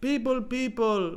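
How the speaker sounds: high, slow mock yelling like a jester. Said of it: "and he yells at".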